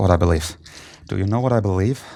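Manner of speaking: muttering under breath. A player voices his character during a dice roll, muttering under breath. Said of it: "under my breath, I go".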